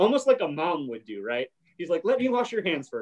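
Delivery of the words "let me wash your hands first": mock mildly irritated, fussing, higher-pitched annoyed voice. Retelling a character's line while discussing a scene: imitating an annoyed tone. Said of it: "he's kind of annoyed".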